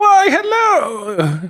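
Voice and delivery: put-on high old gentleman voice. Voicing an older gentleman greeting a player who runs into the store: older gentleman voice. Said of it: "you see an older gentleman there, and he's like".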